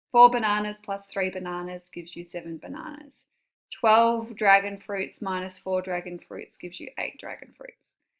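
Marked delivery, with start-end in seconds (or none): none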